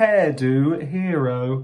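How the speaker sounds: plain reading voice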